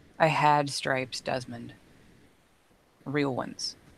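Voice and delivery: low, soft, sighing voice. Playing Jason, answering Desmond: sighing. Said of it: "And Jason sighs".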